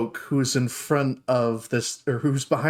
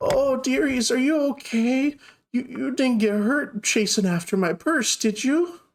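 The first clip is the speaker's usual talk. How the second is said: put-on very high, very slow, sweet little old lady; 11 semitones higher than usual. Voicing a little old lady who is very nice and sweet: sweet little old lady voice. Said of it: "runs over to you all and goes".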